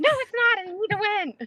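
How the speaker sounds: very high, frustrated, pushed-out protesting tone. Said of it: "And I'm like".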